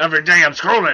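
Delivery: cartoon-style character voice. Introducing a news article to a co-host; Strong Bad impression. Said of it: "That was my Strong Bad impersonation".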